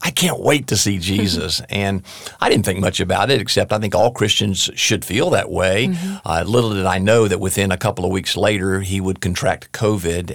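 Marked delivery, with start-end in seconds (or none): 0.0-1.6 mock voice full of eager excitement. Recalling a man's words in one of their last conversations: retelling Howard's excitement. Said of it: "with his excitement in his voice that was uniquely Howard".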